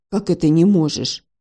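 plain reading voice

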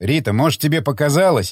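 ordinary delivery, nothing marked

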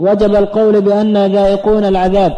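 ordinary delivery

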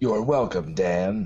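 put-on movie trailer announcer. Redoing IMDb's reply to Dan, now in a Moviefone guy voice. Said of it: "It should sound more like the movie phone guy".

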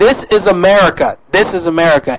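normal talking voice

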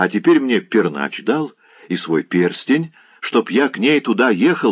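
ordinary delivery

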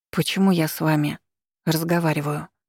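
ordinary delivery

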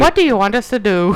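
ordinary delivery

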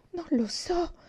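hushed, frightened, high-pitched whisper. Narrator reading a story, Mary replying to a shouted question, whispered. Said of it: "sussurrò Mary".

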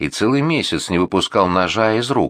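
ordinary delivery

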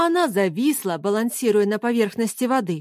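plain

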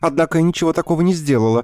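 very high, hurried. A woman speaking to her doctor, hastily adding. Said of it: "поспешила добавить она".

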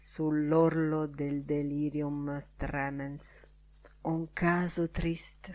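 murmuring. On his way out, a man murmurs a remark to another man. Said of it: "mormorò a J.J".

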